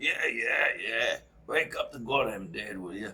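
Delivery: put-on gruff old man's grumbling voice. Retelling a voice calling from the back of the shop, imitating Art's gruff voice. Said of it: "we had this gruff voice".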